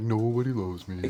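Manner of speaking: put-on gloomy moan. Mocking a friend who always acts gloomy: imitating a mopey Eeyore moan. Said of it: "like, Eeyore all the time".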